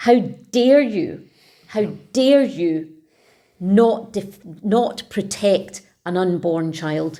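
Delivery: furious, angry outburst. Condemning two politicians over abortion law: furious.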